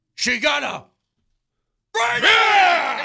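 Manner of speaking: full, over-the-top scream, very loud. Showing how the actor performs in Heat, do a Pacino impression, screaming. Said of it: "It's just screaming at me".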